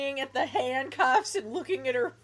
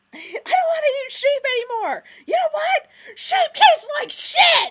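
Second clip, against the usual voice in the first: very high, shrill, very loud screaming; 8 dB louder than usual. Retelling how a man screamed at someone on the phone, retelling a scream. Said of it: "he's just screaming at Gino".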